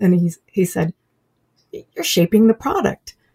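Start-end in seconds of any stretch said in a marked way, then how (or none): 1.7-3.1 acted shock, higher and faster. Retelling what a man said on overhearing the conversation: retelling a shocked remark. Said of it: "in sort of in a shocked voice".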